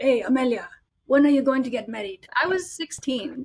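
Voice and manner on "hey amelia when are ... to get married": put-on heavy Italian accent, older man's voice. Retelling her grandpa turning to her at a family dinner, in a thick Italian accent. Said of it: "in his really thick Italian accent".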